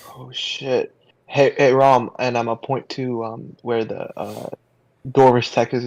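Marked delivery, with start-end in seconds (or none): 0.2-2.1 slow, half-whispered stage whisper. A player, in character, quietly gets Rom's attention: half-whispering under breath. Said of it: "whisper under my breath".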